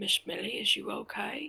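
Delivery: very quiet, soft murmur, barely above a hush. Crouched by an upset woman's table without touching her, speaking very quietly. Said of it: "very quietly saying".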